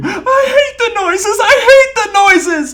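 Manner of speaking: high, loud screaming wail. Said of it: "cover your ears and scream".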